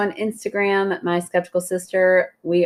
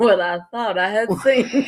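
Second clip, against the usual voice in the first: put-on southern drawl, like a southern belle; 3 semitones higher than usual. Repeating the other speaker's line: imitating a southern accent. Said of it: "You said that so southern".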